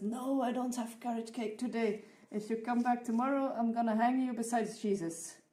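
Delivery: acted, exasperated, super angry pastor voice. Telling a joke, playing the pastor answering a man who wants carrot cake: acting out a super angry pastor. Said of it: "the pastor is like super angry".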